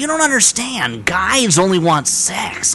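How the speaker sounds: exaggerated, over-enunciated American accent. Quoting a line of dialogue in Gerard Butler's terrible American accent. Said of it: "in Gerard Butler's terrible, like really over enunciated American accent".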